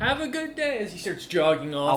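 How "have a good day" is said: put-on very high, boyish young boy voice. Voicing a young courier boy who hands over a letter and smiles: young courier boy voice. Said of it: "smiles and goes".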